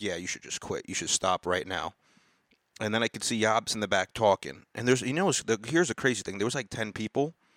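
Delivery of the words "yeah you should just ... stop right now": put-on sarcastic, mocking tone. Retelling what was said to a new comic: imitating own sarcastic tone. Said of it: "just being sarcastic".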